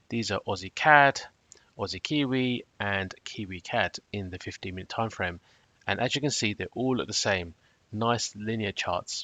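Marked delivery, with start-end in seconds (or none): 7.9-9.2 slow, unexcited, low-energy delivery. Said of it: "I don't sound too excited about them".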